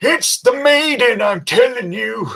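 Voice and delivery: put-on very high old sailor voice, yelling out. Voicing Frank, an old sailor calling out from the back, yelling. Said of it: "raise a mug and yell out".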